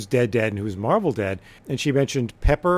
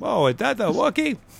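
very high-pitched, creaky put-on voice; 10 semitones higher than usual. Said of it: "That sounds like Elmer Fudd said that".

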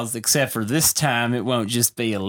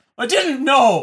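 mock emphatic delivery, higher and louder; 14 semitones higher, 6 dB louder than usual. Retelling a film scene where the son learns the truth: imitating an emphatic line delivery. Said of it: "the line that he delivers is so emphatically".

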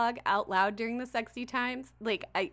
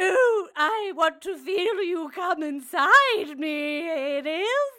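very slow, high, loud, drawn-out mocking girly voice; 8 semitones higher, 8 dB louder than usual. Imitating a male audiobook narrator reading a woman's lines: imitating narrator's Mrs. Doubtfire voice. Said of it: "he sounds like Missus Doubtfire".

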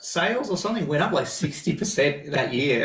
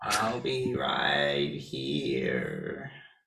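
very low, soft, spooky alien murmur; 13 semitones lower, 7 dB quieter than usual. Taking a turn at the impression after another's attempt, doing an E.T. impression. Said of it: "pretty scary".

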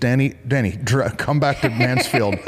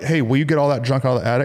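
usual speaking voice

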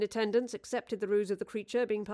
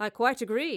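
ordinary delivery, nothing marked

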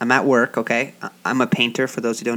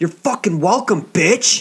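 hostile, aggressive, pitched-up snapping retort; 7 semitones higher, 4 dB louder than usual. Retelling a coworker snapping at a woman at a door: imitating an aggressive retort. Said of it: "Whoa, aggressive, bro".

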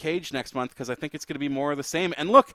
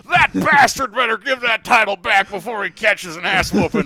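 mock wrestling announcer impression; 5 semitones higher, 8 dB louder than usual. Imitating a wrestling commentator selling the danger: J R impression. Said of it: "I don't know why I like that impression so much".

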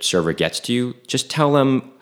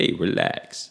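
soft, breathy, barely voiced, calming whisper; 6 dB quieter than usual. Quoting what the character says to Adrian: Rocky Balboa voice. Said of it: "and he says to Adrian".

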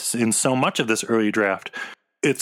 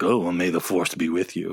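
low, cold-blooded, sarcastic delivery; 6 semitones lower than usual. Imagining Snoke saying the farewell line: imitating Snoke saying it sarcastically.

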